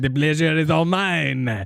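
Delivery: put-on French accent. Trying a French voice for a character read: Carbot voice. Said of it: "that's just gonna be Carbot".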